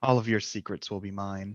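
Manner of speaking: muttered quietly under his breath. Voicing Professor Roland as he looks at the place: under his breath. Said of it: "kind of under his breath more than anything".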